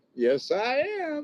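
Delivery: gloating, taunting tone.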